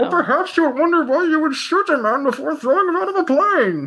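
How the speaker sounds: very high felt-puppet character voice. Performing a line after being asked for a Muppet Bane: Muppet Bane voice. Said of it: "let me hear a Muppet Bane".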